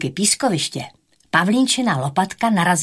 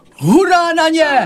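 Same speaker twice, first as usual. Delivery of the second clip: very high, loud, eager cheering; 11 semitones higher, 7 dB louder than usual. Stegy the dinosaur answers his friends as they all introduce themselves: exclaiming. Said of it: "A Stegy zvolal".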